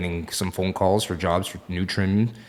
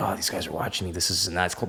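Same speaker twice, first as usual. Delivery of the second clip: put-on mutter under breath, quieter; 6 dB quieter than usual. Retelling what the kid serving the line muttered: imitating muttering under breath. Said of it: "he's saying things under his breath like".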